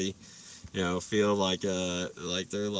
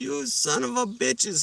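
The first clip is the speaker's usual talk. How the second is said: high, put-on Cuban accent. Retelling Will's reaction to the group, imitating Will's Cuban accent. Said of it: "Cuban accent".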